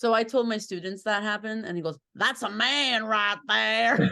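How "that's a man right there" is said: slow, loud put-on Southern drawl. Teacher retelling what a student said after hearing a story, Southern accent. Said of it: "I sounded like a Southern accent".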